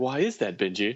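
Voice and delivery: eerie, unsettling creepy-doll voice. Mimicking another speaker's question to tease them: imitating a creepy tone. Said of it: "Don't say it like that".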